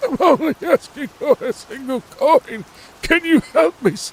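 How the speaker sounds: put-on elderly man voice, very high. While planning a game route, the speaker breaks into an old man voice. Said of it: "That was me doing that voice".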